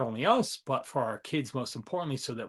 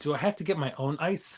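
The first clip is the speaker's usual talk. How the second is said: ordinary talk, nothing marked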